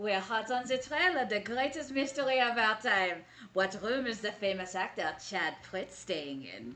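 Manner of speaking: put-on French-accented character voice. Voicing their tiefling character in a group story: french accent.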